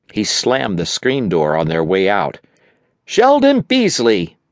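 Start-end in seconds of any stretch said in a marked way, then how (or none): 3.1-4.3 very high-pitched, loud, carrying shout. Mom calls Sheldon after he slams the screen door, shouting. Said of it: "Mom shouted".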